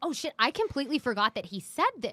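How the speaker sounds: ordinary delivery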